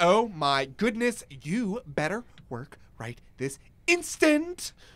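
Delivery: put-on sassy, bossy scolding, slow and drawn-out. Recreating yelling at a car to make it work, mock-sassy. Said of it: "And I get really sassy".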